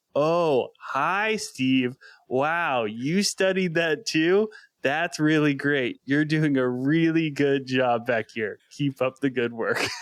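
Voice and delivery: slow, drawn-out, mild shout-style talking. Retelling a new hire answering a coworker: imitating someone shouting slowly. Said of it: "would mirror that behavior".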